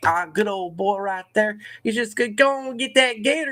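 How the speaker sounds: high put-on Southern accent. Discussing American accents, speaker imitates someone down south: Southern good-old-boy accent. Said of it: "You can do that really well".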